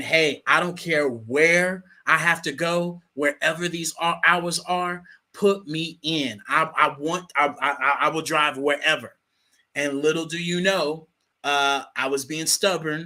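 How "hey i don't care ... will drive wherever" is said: ordinary talk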